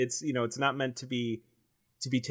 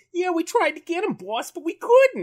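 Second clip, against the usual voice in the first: very high, loud put-on Jersey accent; 7 dB louder than usual. Quoting a Tengu from the show reporting to the boss: Tengu's Jersey accent. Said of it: "a Joyzy accent".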